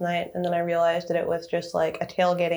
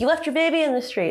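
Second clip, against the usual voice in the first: put-on high-pitched yell; 9 semitones higher than usual. Retelling yelling at people who surrounded him, retelling own yell. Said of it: "And then I yelled like".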